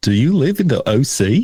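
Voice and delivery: put-on New Zealand accent edging toward Australian. Asked to read typed text aloud, the speaker says it in a New Zealand accent. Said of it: "can you say it in your New Zealander accent?".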